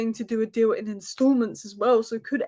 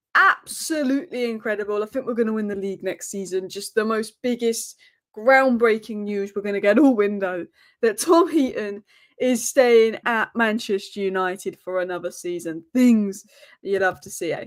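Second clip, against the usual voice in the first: plain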